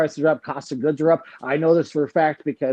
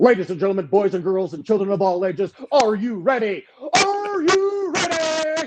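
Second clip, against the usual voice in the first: big boxing ring announcer voice, pitched up; 7 semitones higher than usual. Demonstrating how the next Friday Fitcast should open, in a ring announcer voice. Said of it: "a guy has to go like this".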